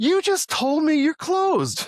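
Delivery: shrill, high, loud, outraged angry yell. Retelling how he yelled at a woman who said they were closed, retelling his own yell. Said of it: "I yelled at her".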